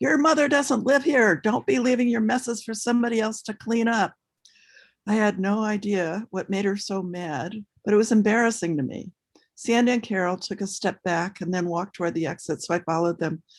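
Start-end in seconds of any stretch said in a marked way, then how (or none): 0.0-4.1 mock-shrill high voice, much higher, faster. Quoting a woman scolding the speaker and friends, imitating her shrill, high voice. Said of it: "her fevered pitch so high her voice was shrill".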